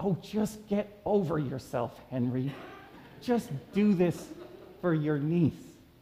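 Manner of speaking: stage whisper loud enough for all to hear. Retelling what a woman finally said to henry, in a loud whisper. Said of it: "in a loud whisper".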